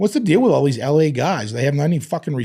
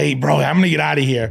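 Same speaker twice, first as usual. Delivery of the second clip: put-on acted drunken voice. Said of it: "He's drunk".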